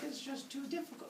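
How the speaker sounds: high, soft, whiny delivery. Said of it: "choose not to have anyone step up because, like".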